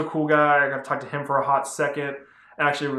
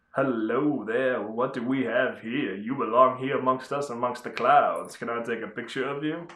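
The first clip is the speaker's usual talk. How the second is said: put-on smooth flirty voice, slower; 2 semitones lower, 3 dB quieter than usual. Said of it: "the smooth guy I, I am, would go like".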